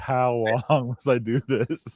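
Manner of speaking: slow, very drawn-out, exasperated, frustrated voice. Retelling Jesus dealing with people not getting it: imitating frustration. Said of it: "I can hear the frustration of Jesus".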